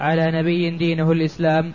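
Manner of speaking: ordinary talk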